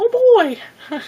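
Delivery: cartoon voice, way up high and loud. Explaining what their voice sounds like when they talk any higher, in a Mickey Mouse voice. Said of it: "I sound like Mickey Mouse".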